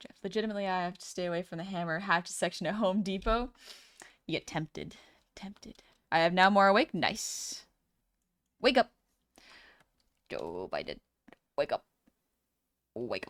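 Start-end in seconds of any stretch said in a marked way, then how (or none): 8.6-13.3 very low, croaking, swooping frog voice. Telling someone to wake up, in a put-on frog voice. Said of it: "I put my frog voice on for that".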